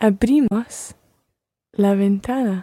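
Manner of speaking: unsure, hesitant, halting delivery.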